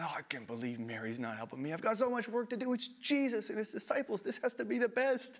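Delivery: muttering under breath. Acting out Martha cleaning and frustrated: muttering under breath. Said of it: "starting to mutter under her breath".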